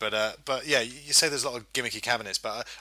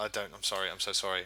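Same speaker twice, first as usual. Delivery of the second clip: put-on frightened voice, lower and quieter; 3 semitones lower, 5 dB quieter than usual. Retelling apologizing as a little kid to a bigger boy: imitating own scared apology. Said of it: "I was so little and so scared".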